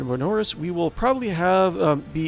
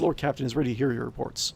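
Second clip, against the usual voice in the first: normal talking voice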